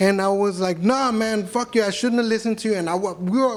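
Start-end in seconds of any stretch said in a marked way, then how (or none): 0.8-2.7 mock hot-tempered, heated, angry tone. Retelling his own words in a heated street argument: retelling his own angry words. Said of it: "we're literally arguing in the middle of Hollywood Boulevard".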